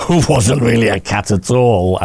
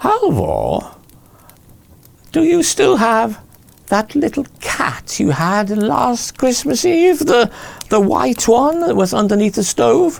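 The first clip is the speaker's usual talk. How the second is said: very high, screeching, screechy troll voice. Narrator voices a troll calling to a man from the forest, screechy troll voice. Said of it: "It was one of those screechy kind of troll voices".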